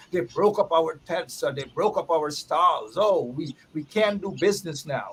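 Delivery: ordinary delivery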